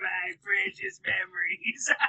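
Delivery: put-on rasping, creaky, old, very high demon voice. Teased for sounding like an old demon, answering in the old demon voice. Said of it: "you sound like a old uh, freaking post-era, like, demon".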